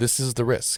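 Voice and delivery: ordinary talk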